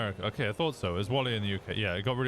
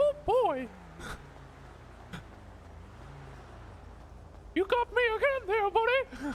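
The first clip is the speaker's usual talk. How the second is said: very high, swooping, bouncy squeaky voice; 12 semitones higher than usual. Describing how they imagined a character sounding, the speaker voices him like Mickey Mouse. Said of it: "almost like Mickey Mouse".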